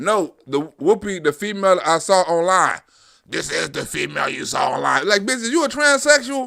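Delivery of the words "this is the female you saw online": put-on low, raspy phone-style voice. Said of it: "You sound like [name]".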